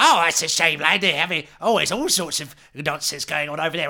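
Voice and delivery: rambling sea hag voice. A player asks the ferrywoman about the ferryman; she answers in a sea hag voice. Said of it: "She's a sea hag. / I think it is a woman. / Tell me about the ferryman. / And she goes off on one".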